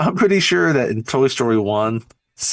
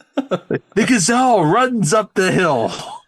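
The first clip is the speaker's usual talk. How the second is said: really bad Australian accent, high, slow, very drawn out; 8 semitones higher, 3 dB louder than usual. Retelling a film scene of a man mock-narrating a nature documentary: bad Australian accent. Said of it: "With a really bad Australian accent".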